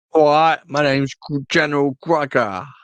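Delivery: really bad Cockney impression. Discussing an actor's role, the speaker voices the general in a bad Cockney accent. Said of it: "That was my really bad Cockney impression".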